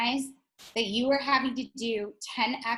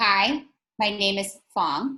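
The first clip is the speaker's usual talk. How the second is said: slow, deliberate, carefully paced, word by word; 2 semitones lower, 4 dB louder than usual. Modeling an introduction for a learner to repeat, slow, deliberate speech. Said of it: "We are going to slow you down even more".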